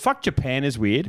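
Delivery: put-on deadpan, slow and dead straight. Retelling what a friend said after leaving the bathroom: imitating a friend's straight-faced deadpan. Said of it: "looked at us straight face and goes".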